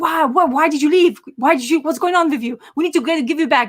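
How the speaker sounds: frantic, worried, high, panicky voice. Retelling a story, acting out a grandson's questions to his grandmother, retelling panicky questions. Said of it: "he gets panicky".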